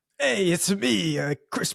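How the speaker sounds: put-on vague Italian accent. Mocking a Mario casting choice, as Chris Pratt with vague Italian accent. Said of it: "with a vaguely Italian accent".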